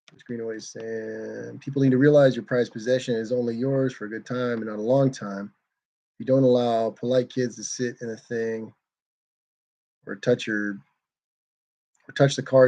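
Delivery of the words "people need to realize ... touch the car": ordinary talk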